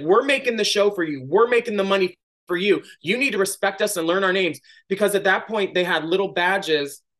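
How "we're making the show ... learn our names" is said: furious, angry barking. Retelling confronting a woman who didn't know their names, retelling barking at her. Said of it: "I started barking at her like an animal".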